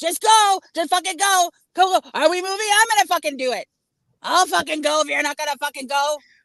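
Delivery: impatient angry cursing. Speaker acting out the other person waiting in traffic; imitating an angry driver. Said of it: "You're like".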